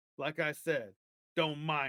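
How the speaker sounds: usual speaking voice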